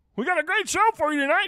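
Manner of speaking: cartoon frog voice, very high. Showing how Kermit differs from Cleveland Brown, in a Kermit the Frog voice. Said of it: "and then Kermit's like".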